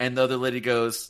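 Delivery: ordinary delivery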